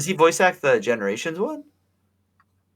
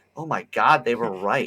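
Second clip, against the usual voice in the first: usual speaking voice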